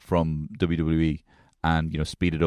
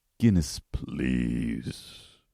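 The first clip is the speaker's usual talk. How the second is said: voice sunk all the way down; 4 semitones lower, 4 dB quieter than usual. Showing how to order at a bar: very low voice. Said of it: "You gotta be down".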